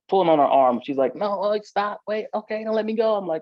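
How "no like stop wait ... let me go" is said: frantic, desperate pleading, high-pitched. Retelling how a woman held by the arm reacted: imitating a woman begging. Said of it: "she's begging me not to hurt her".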